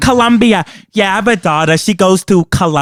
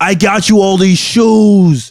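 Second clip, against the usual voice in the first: put-on speech with every word drawn out. Imitating a man who always extends his words, imitate someone who extends his words. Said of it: "he always extends his words".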